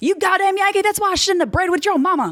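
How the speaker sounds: put-on very high, shrill, angry, full Oklahoma accent. Imitating a father yelling at the speaker: full Okie accent, angry. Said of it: "full Okie".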